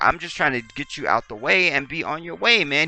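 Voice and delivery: earnest, almost pleading, nearly begging tone. Retelling how a cop spoke during a stop: imitating a cop pleading. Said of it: "He was almost pleading with them".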